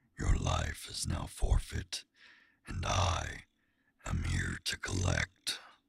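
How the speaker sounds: deep, gritty demonic voice. Actor voices a demon character, in a deep gritty demon voice. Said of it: "I love the deep, demony, like gritty voice".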